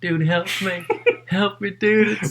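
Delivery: acted yelling. Recounting yelling for help from the couch, eyes closed: retelling own yelling. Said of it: "just yelling at him".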